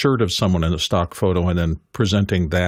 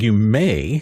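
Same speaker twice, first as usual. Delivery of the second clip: "may" strongly stressed and emphasized; 3 semitones higher than usual. Warning about violating stock photography terms, strong stress on may. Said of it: "I'm saying emphasizing the word may".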